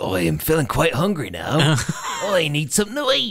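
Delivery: put-on very odd British accent, swooping and high. Describing a game character who prods you to feed him, in a strange British accent. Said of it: "in a very strange sort of British accent".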